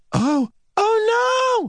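very high storybook-style cry with drawn-out oh. As a hawk's shadow falls over her: crying out. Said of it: "She cried".

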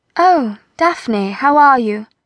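sunny, chirpy, bright and cheerful voice. Sabia greets a woman she takes for Daphne: bright. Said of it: "Sabia said brightly".

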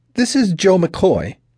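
thin, rather nervous, high-pitched voice. Narrator reads Joe McCoy introducing himself, in a thin, nervous voice. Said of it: "the thin, rather nervous voice said".

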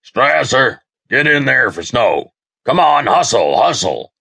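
high, hollered call. A coach turns during a game and calls a player in, hollering. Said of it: "turned and hollered".

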